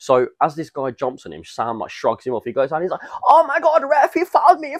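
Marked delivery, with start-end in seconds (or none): 3.3-4.8 clumsy, bad German accent, pitched very high. Retelling a match, quoting a player who went down claiming a foul, bad german accent. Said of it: "Your attempt at a German accent".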